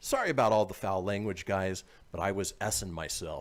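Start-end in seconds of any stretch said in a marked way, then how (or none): none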